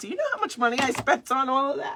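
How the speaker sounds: mock indignant anger. Retelling a complaint about money spent on flowers: imitating someone getting mad. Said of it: "he's getting mad at me for laughing".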